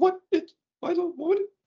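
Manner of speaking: squeaked, very high-pitched. Testing whether a voice system can be fooled, speaking in a Mickey Mouse voice. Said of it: "now I'm talking like Mickey Mouse voice".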